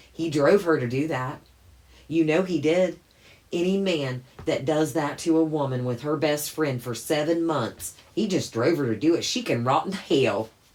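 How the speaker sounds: put-on loud, over-the-top Southern accent, laid on thick. Voicing imagined online comments, in an exaggerated southern impression. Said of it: "that was my best Southern impression".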